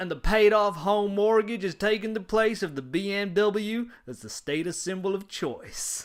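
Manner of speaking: put-on high-pitched, loud Texas accent. Tell what you heard on the podcast, doing Dave Ramsey in a Texas accent. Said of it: "I gotta try and do it in my best Texas accent".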